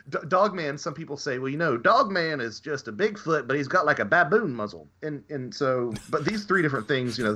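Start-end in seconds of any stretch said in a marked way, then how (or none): 1.3-4.8 mock Southern drawl, pitched higher. Quoting what some people say about Dogman: put-on Southern accent. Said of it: "puts on the Southern accent for it".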